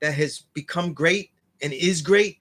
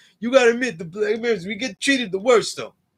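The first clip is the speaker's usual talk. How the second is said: put-on crying tone; 5 semitones higher than usual. Mocking people who complain, imitating someone crying. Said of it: "you sound like a crying bitch to me".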